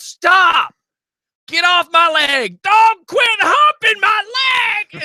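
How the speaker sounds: very high, very drawn-out shout. Telling listeners about a phone call, retelling a yell. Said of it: "And I yelled".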